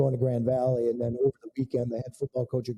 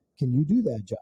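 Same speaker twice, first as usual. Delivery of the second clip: mock-loving, sweet, nice put-on voice. Retelling what his wife said to him, imitating wife's sweet loving voice. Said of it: "very nicely and loving in her wonderful voice".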